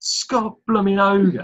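Birmingham accent. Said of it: "I almost sound like a Birmingham".

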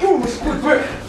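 high, loud, demanding, laughing yell.

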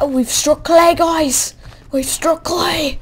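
inaccurate put-on Australian accent. Speaker telling viewers they've struck clay, exaggerated australian accent. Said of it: "imitating an Australian accent".

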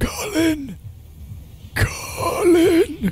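very high, rasping, dying voice. Describing a skeletal thing outside the window calling a name: mock raspy dying voice. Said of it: "in a very raspy, dying voice".

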